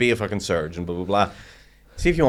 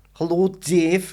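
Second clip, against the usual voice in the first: very high put-on Scouse accent; 10 semitones higher than usual. Asked by the other speaker to try one, attempts a scouse accent. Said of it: "Can you do a Scouse accent".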